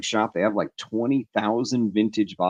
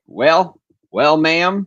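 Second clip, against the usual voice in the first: put-on Texas accent, higher and louder; 6 semitones higher, 6 dB louder than usual. Retelling answering a woman at a gas station: put-on texas accent. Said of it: "but on the Texas accent".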